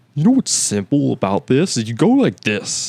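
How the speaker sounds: pushy, aggressive, loud, swooping voice. Imitating how Dan Soder talks: aggressive Dan Soder voice. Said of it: "a kind of aggressive vo-, voice".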